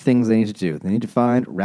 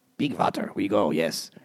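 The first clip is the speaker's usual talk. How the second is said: put-on Eastern European or Swedish accent, quieter, slower; 7 dB quieter than usual. Retelling a book, the speaker voices the bird in a mock eastern european accent. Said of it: "it's like Eastern European or Swedish".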